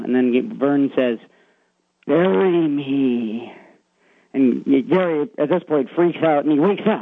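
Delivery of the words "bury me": creepy, really scary voice. Retelling a story, quoting the figure in the window: really scary voice. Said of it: "In a really scary voice".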